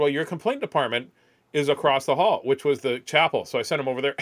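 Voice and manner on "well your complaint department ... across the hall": plain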